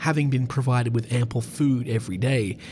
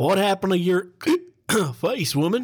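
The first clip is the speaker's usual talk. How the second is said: put-on high, drunken bellow broken by hiccups; 6 semitones higher than usual. Narrator reads Bill calling out to Maud, bellowing between hiccups. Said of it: "Bill bellowed between hiccups".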